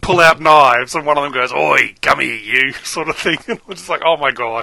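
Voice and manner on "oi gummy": put-on heavy Aussie accent. Retelling a scene where an Aussie punk confronts the crew, thick Australian accent. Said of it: "Very thick Australian accent".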